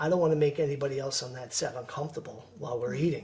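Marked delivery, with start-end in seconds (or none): none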